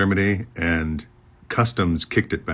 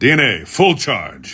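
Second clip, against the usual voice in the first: authoritative, no-nonsense, businesslike, commanding call-out; 3 semitones higher, 4 dB louder than usual. Recalling a character's line, imitating Samson's commanding voice. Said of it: "Samson's voice was kind of commanding and businesslike".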